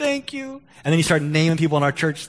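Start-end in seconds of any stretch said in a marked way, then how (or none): 0.0-0.6 play-acted weepy crying voice, pitched way up. Retelling a jailed man thanking the pastor: imitating someone crying.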